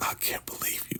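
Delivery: mock muttering under the breath. Retelling a scene where River reacts while looking at Ruth: imitating mumbling under the breath. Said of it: "mumbling under his voice".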